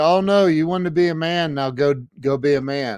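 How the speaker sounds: ordinary talk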